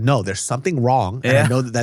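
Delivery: normal talking voice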